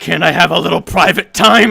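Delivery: very loud, rough, menacing snarl. A game master voices a woman pinning a player against a wall, snarling. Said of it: "as she snarls".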